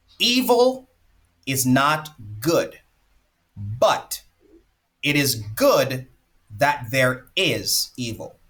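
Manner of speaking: deliberate, broken up, very slow, halting delivery. Sharing a quote that was hard to grasp at first, said very slowly. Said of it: "I'm going to say this very slowly".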